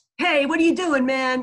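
riled-up, strident call. Demonstrating feeling riled up on the road, loud strident voice. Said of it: "a loud and strident voice".

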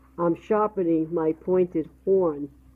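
plain reading voice

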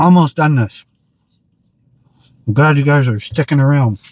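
speaking with mouth full of food. Reviewing food on camera for channel viewers, talking with mouth full. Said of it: "Watching me talk with my mouth full".

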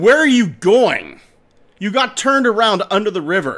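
high, loud shout calling out over a distance. Telling a legend, the man calls across the river: shouting across a river. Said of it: "the man shouts to him".

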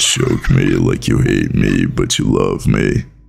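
very deep, low-voiced delivery. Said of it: "your voice is deep as shit".

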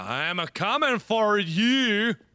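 very slow fake Swedish accent, drawn-out you. Playing a round where everyone talks with a put-on Swedish accent. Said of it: "This is talk like a Swedish round".

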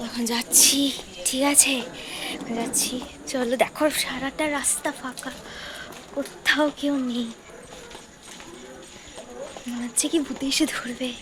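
very soft, hushed speaking. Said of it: "একদম আস্তে আস্তে কথা বলছি আমি".

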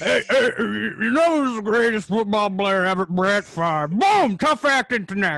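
booming, drawn-out, terrible voice, bellowed slow and badly. Doing an impression of John Madden talking football: terrible John Madden impersonation. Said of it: "That's a terrible John Madden impersonation".

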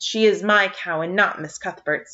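ordinary delivery

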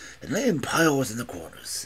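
ordinary delivery

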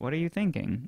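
gentle, soft, kind and courteous polite tone. Narrator reading a slave trader asking her a question: kind, polite tone. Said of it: "in a more kind, polite tone".

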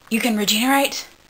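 ordinary delivery

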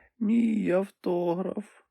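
hoarse, high-pitched mumbled words. A narrator reads a character's reply to a cheering woman, hoarse mumble. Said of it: "промимрив він захриплим голосом".

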